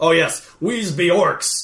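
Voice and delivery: put-on pirate-style accent. Retelling what the party said as orcs in a game, in a pirate accent. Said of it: "Why do you have a pirate accent then?".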